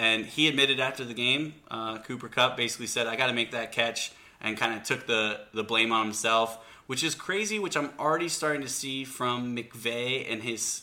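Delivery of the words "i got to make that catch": usual speaking voice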